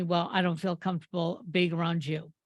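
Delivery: normal talking voice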